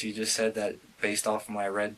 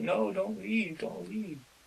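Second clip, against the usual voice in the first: sobbing, very high-pitched, tearful crying voice; 11 semitones higher than usual. Retelling a woman's pleas as she kept crying: imitating someone crying. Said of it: "she just kept crying".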